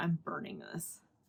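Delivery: plain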